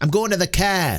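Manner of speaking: put-on Boston accent, flat delivery. Mocking Affleck as Batman, line in Affleck Batman Boston accent. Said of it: "hearing his Boston accent".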